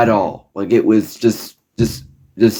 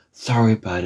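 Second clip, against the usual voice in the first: soft, very gentle, minimizing, dismissive tone; 6 dB quieter than usual. Retelling a doctor's night-time answer to a plea: imitating a very gentle tone. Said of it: "in a very, very gentle way".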